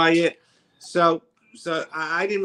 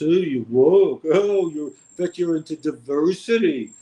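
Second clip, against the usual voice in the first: derisive, mocking dude-bro caricature voice; 4 dB louder than usual. Mocking the bros who rant about wokeness: impression of the bros. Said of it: "That's my impression of the bros".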